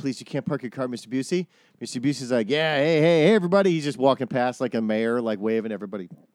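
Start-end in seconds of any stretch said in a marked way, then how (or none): 0.0-1.5 put-on pleading. Retelling how a new person chased after Mr. Busey, mock pleading. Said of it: "they started chasing after him".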